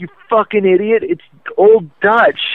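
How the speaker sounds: scornful, high-pitched mocking yell. Telling how she yelled a correction at him in the hallway, retelling a yell. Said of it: "she just yelled out in the hallway".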